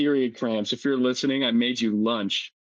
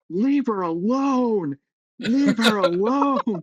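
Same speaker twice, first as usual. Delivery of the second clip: acted, very high, very slow yell at full volume; 11 semitones higher, 4 dB louder than usual. Retelling what was yelled at the girl's period cramps: retelling own yell at top of lungs. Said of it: "I yelled at the top of my lungs".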